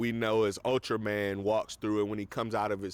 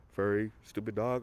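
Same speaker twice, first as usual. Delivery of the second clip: low, mumbled, taunting tone. Retelling a movie scene where a character insults a dog: imitating a mumbled line. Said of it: "He kinda mumbles it and drinks".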